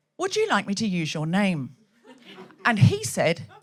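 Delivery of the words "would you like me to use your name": put-on voice assistant voice, quieter. Retelling what Alexa says to the husband: imitating Alexa. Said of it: "she was saying".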